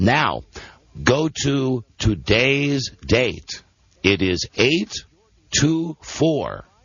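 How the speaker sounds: speaking deliberately slowly. Giving listeners website directions step by step: speaking slowly on purpose. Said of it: "I'm only speaking slowly because you're stupid".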